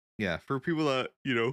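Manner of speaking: talking through a yawn. Explaining a feature to the other speaker, talking through a yawn. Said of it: "I'm yawning".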